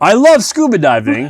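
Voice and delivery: terrible, vague put-on European accent. Retelling a man's speech, in a terrible european accent. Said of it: "that was a terrible European accent".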